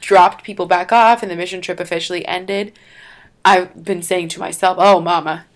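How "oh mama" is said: put-on Southern accent. Repeating what one now says to oneself: put-on Southern accent. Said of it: "started talking with a Southern accent".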